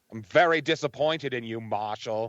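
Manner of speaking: put-on Maine, New England accent. Acting out a guy's words to Marshall from a clip: Maine accent. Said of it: "You do that Maine accent really well".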